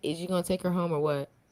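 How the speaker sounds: usual speaking voice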